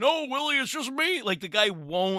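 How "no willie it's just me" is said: very high puppet-style voice. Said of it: "Alf, Alf voice".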